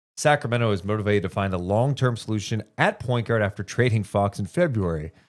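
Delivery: ordinary delivery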